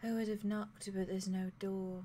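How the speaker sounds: very soft timid voice. Voicing a character who greets someone in a grove: speaking very softly. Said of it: "very softly says".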